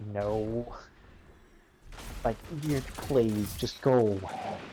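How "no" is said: put-on disappointed father voice, lower, quieter. Retelling a game scene, imitating Saladin saying no like a disappointed father. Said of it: "Like a disappointed father".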